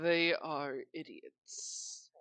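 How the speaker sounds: muttered under breath. Narrator voicing a character who sighs before walking out, muttered under breath. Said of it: "you can hear him mutter under his breath".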